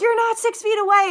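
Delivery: acted, very high, shrill, furious screaming woman's voice. Retelling a woman cornering the speaker at a laundromat: imitating a woman screaming. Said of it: "she's screaming like".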